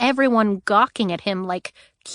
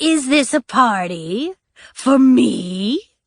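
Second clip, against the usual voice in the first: squeaky, high gleeful voice, higher and louder; 3 semitones higher, 5 dB louder than usual. Reading a story aloud, a chained prisoner greets the captain: squeaky, gleeful voice. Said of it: "in his squeaky, gleeful voice".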